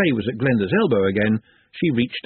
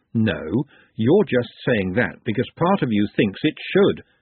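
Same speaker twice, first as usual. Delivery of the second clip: ordinary delivery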